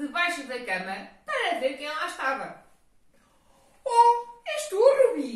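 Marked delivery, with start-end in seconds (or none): 3.8-5.4 very loud, very slow, high, drawn-out exclamation. Narrator voicing Pedro, who was afraid of a ghost, exclaiming. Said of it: "Exclamou o Pedro".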